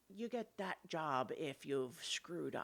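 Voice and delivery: hushed, confiding half-whispered aside. Recounting what she half-whispers to you about the guards, retelling a half-whisper. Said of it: "she kind of whispers to you".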